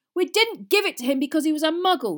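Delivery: very loud, offended, indignant outburst. After his father shouts at them, a son answers indignantly. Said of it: "said Fred indignantly".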